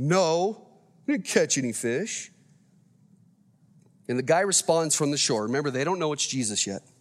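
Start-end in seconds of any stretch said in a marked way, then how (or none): 0.0-2.3 slow, mock sulky, sorry-for-themselves tone. Picturing fishermen answering the man on the shore, mock-sulking tone. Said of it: "sulking with that tone".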